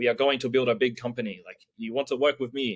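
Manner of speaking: ordinary talk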